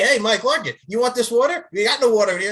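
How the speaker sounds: normal, plain, friendly voice. Retelling how Joel Kane offered water and gave none: imitating Joel Kane. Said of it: "You're like".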